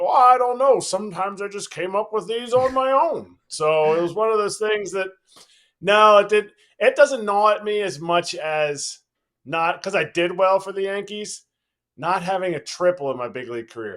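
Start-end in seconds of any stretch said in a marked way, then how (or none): 0.0-3.4 high, grand, illustrious announcer voice. Retelling what the announcer answered when asked about the call: John Sterling voice. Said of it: "in his illustrious voice".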